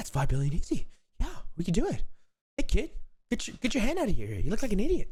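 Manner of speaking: dumb hokey voice, very high, swooping and sing-song. Doing an impression of a film character's lines: Mark Wahlberg impression. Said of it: "My Wahlberg impression".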